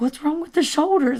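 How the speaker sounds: put-on panicked voice. Retelling how a man kept asking Courtney the same question, imitating a panicked voice. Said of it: "he's freaking out now".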